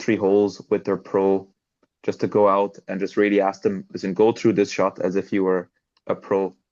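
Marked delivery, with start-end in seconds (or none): none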